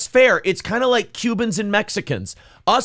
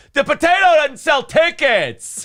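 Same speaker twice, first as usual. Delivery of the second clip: yelling, pitched up high; 6 semitones higher than usual. Retelling a performer's bit at DabbleCon, doing the Kevin Brennan impression, yelling. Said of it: "So he's yelling at the potato".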